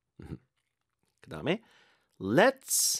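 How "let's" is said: LET'S stressed and pitched high. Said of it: "let's에 힘 좀 주세요".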